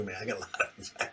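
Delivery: very quiet, breathy, barely audible whisper. Retelling a neighbor's words: imitating a whisper. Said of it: "he had to whisper it to me too".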